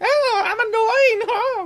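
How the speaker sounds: very high, drawn-out puppet voice. Repeating the voice just done on request: Punch and Judy voice. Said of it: "You sound like one of those Punch and Judy things".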